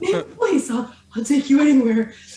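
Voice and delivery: loud unicorn character voice. Joking about what the teleporting unicorn would say: imagined unicorn voice. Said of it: "I just imagine the unicorn being like".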